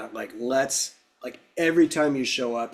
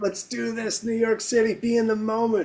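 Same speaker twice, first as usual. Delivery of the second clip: enthusiastic put-on voice, higher pitch; 10 semitones higher than usual. Imitating a remembered teacher urging [name] to try things: imitating him enthusiastically. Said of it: "His enthusiasm was unfreaking paralleled".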